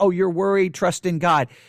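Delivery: ordinary talk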